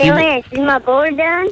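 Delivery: easy, relaxed southern drawl accent. Asking an uncle on the phone about a surfboard: southern accent. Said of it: "if you didn't talk in a southern accent".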